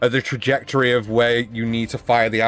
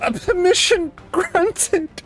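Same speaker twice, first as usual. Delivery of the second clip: thin, feeble, very weak, very high voice. Retelling a game moment, the captain's reply comes in a very weak voice. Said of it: "You hear this like very like weak voice go".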